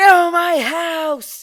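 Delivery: very loud, shrill, high screaming. Retelling screaming at a window knock: imitating own scream.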